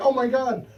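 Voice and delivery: high, loud, shocked, gasping exclamation. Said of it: "Liberal people thought I was serious".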